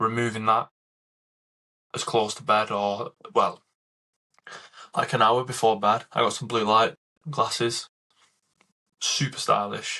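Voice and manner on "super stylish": dry, deadpan, sarcastic tone. Speaker telling listeners about the blue light glasses they got, in a sarcastic tone. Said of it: "if you can't tell the sarcasm in my voice".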